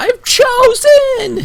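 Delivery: very high, loud, jubilant creature whoop. Voicing a creature in the cavern as it jumps up: celebrating creature voice. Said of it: "almost like he's celebrating now".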